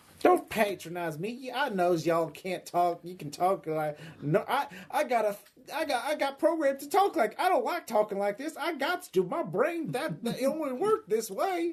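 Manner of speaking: very high-pitched, full hillbilly voice. Addressed as Cletus by the other speaker, answer back in a Cletus hillbilly voice. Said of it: "hillbilly from popular media and just given life".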